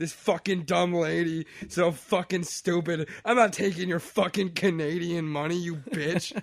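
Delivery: mock furious, livid rant that keeps going on. Retelling a man coming back after a customer leaves, acting out his livid rant. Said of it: "he's livid and he's just going on".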